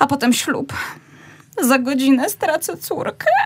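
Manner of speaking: tearful voice. A mother an hour before her daughter's wedding, crying. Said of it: "ty płaczesz".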